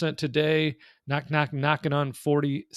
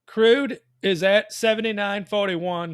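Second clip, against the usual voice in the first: loud, higher-pitched shouting; 6 semitones higher, 5 dB louder than usual. Answering a question into a microphone that sits too far away, yelling. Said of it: "Why are you yelling?".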